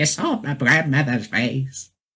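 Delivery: small, gremlin-like creature voice. Quoting a woman's line the speaker loves: little gremlin voice. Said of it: "Like in her little gremlin voice".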